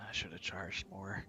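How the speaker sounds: whispering. Narrating a tabletop game, voicing a woman as the players walk away, whispering. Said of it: "you hear a whisper".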